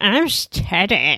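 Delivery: put-on drunk voice with slurred words. Acting out a drunk character in the story: Teddy slurring drunkenly. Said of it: "Teddy is slurring his words".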